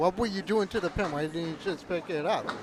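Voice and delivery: plain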